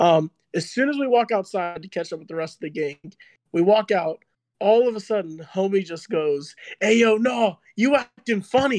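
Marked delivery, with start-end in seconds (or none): 6.8-8.8 put-on yelling, slower. Telling what a guy outside suddenly yelled at him, imitating someone yelling. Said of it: "Why is he yelling?".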